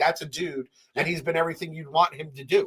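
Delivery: plain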